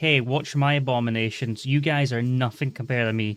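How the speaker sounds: ordinary talk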